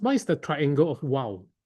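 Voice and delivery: plain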